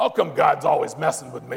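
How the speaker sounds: gravelly, creaky, rough, bitter rasp.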